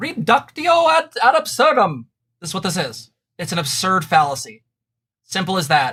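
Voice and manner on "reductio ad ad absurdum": very high, loud, slow fake British accent. Naming a logical fallacy from a post, in a put-on British accent. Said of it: "I have to use my best British accent for this one".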